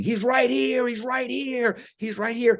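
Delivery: shrill, frantic, very high screaming. Retelling a man on the sidewalk who starts screaming: imitating a man screaming. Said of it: "he starts screaming".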